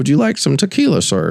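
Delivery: polite flight attendant voice. Retelling being offered drinks on a flight, imitating airline staff offering drinks. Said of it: "I don't know why I make them sound like that".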